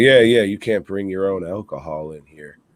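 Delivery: put-on stern voice. Retelling how a guy told them they had to go: imitating someone being stern. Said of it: "being all stern and shit".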